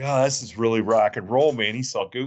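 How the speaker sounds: plain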